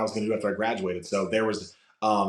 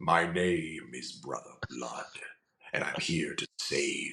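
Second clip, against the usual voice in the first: deep, hushed, breathy voice; 6 semitones lower, 6 dB quieter than usual. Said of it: "and then I lowered my voice".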